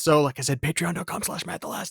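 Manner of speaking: whispering. Plugging their patreon to the co-hosts, whispering. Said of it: "You're whispering it".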